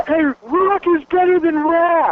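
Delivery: shouting out. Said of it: "I yelled out".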